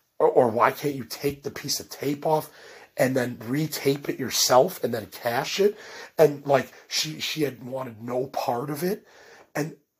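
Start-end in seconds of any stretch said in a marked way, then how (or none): none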